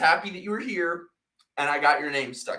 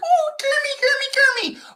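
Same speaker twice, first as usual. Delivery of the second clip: affected feminine voice, much higher, slower; 12 dB louder than usual. Explaining how Miss Piggy tried to sound, doing Miss Piggy's put-on feminine voice. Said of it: "try to sound like very feminine".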